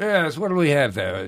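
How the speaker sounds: British accent, waiter style.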